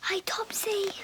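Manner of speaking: whispering. Greeting someone while the baby sleeps nearby: whispering. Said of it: "Why are you whispering?".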